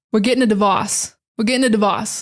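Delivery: Boston-accented pronunciation. Demonstrating how Boston speakers say a word, in a Boston accent. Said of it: "some words are really funny in the Boston accent".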